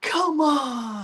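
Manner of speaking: very high, shrill holler. Telling what Brian always does, imitating Brian's yell. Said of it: "Brian always yells".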